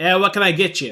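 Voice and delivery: put-on loud, high, growling Boston accent. Voicing a Wookiee waiter taking the table's order: growling Boston accent. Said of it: "growls in a distinctly Bostonian accent".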